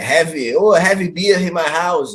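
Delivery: thick, laid-on Brazilian accent in English. Showing how Brazilians sound speaking English: heavy Brazilian accent. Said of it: "esse sotaque carregado de falar".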